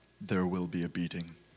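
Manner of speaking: low, deep-voiced. Playing the chief in a skit, announcing a decision: deeper chief voice. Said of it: "Chief's voice is deeper than mine".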